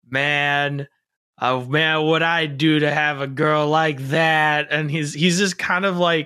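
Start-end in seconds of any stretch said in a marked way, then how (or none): 0.1-4.6 put-on surfer voice, louder and slower. Describing an interesting take on Majima, doing it: slouchy surfer-dude Majima voice. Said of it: "if the Joker was more of like a surfer dude".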